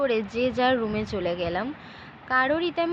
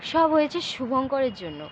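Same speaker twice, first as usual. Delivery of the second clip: ordinary delivery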